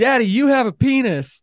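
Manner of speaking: put-on very high, loud, shrill little-kid yell. Retelling the daughter's outburst during the quietest time in church, retelling a daughter's yell. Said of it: "she yells out".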